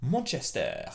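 "Manchester" pronounced with a French accent. Naming the city where you might live: french accent on manchester. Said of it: "See the French accent?".

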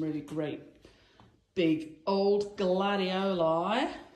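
slow, drawn-out fake Australian accent. Describing flowers for a party arrangement, in a fake australian accent. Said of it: "Forgive the Australian accent, cod Australian accent there".

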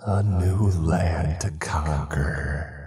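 eerie, hissed voice. A narrator reads the line of a haunting voice in a story, hissing voice. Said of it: "the voice hissed".

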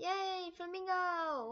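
high, sarcastic, fake-hyped cheer. Reacting to a voice heard in the game: sarcastic fake enthusiasm. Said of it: "I sound so hyped about this".

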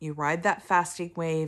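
normal talking voice

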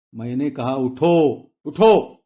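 loud, roaring bellowed delivery. To companions still lying down who refuse to move, roared. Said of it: "Somaiya गरजला".

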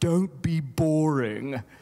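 put-on English accent. Quoting Linda's advice to you, in your English accent for Linda. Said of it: "That's my English accent for Linda".

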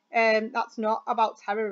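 ordinary delivery

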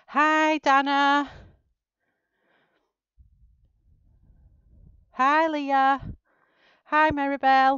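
very loud, high and out of breath. Greeting people coming in after an internet connection drop, out of breath. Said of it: "Gosh, I'm out of breath".

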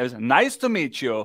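low, put-on Russian accent. Reading out the reply he wrote back, in a Borat-like Russian accent. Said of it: "I'm putting it in his accent".

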